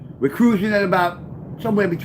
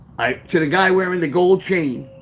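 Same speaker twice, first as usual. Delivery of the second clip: plain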